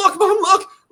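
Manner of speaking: put-on, frantic, manic, very high-pitched urgency. Retelling how a sister showed their mom a clip: imitating a manic voice. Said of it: "in this manic voice".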